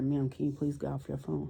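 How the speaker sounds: hushed whispering. Speaker retells what she said to a woman, goddaughter beside her: retold whisper. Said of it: "I'm whispering to her".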